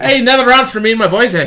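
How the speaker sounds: put-on Irish accent. Asked about drinking with an Irishman, putting on an Irish accent. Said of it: "can do an Irish accent".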